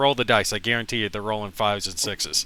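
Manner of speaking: ordinary talk, nothing marked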